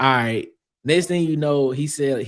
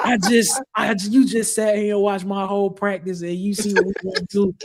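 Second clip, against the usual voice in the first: high-pitched, shouted, yelling tirade; 7 semitones higher than usual. Retelling how a coach burst out of a door: imitating someone yelling. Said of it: "he started yelling at him".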